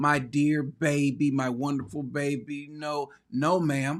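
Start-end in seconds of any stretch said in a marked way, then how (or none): 0.0-2.7 very slow, drawn-out weeping, crying lament. Imitating a mother as her son is led away by cops: imitating a crying mother. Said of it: "his mother is on the side 'cause she's crying".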